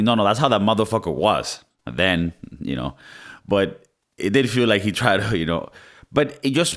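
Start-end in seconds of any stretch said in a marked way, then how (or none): none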